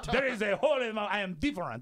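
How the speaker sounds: put-on speaking with a French accent. Voicing a painted accent wall in a room, French accent. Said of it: "and that was French".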